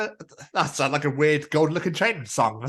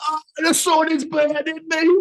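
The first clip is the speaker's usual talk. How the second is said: put-on Brummie vampire voice, very high and slow; 11 semitones higher, 4 dB louder than usual. Joking that Midlanders burn like vampires outside the Midlands: Brummy vampire voice. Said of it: "The Brummy vampire impression was incredible".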